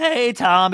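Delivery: trembling, unsteady delivery. Imagining a reality show teaser, contrasting Raquel's old greeting: shaky voice imitating Raquel. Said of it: "the shaky".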